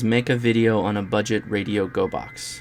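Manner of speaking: plain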